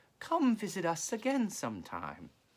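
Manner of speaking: steady, well-controlled high falsetto head voice. The great detective putting a cat out the back door, in a well-controlled falsetto. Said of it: "in a well-controlled falsetto".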